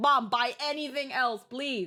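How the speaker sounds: worn-out, pleading, begging tone. Retelling asking mom for different food: imitating own past begging. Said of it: "before I'm like".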